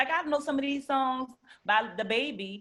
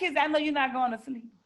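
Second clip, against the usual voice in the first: ordinary delivery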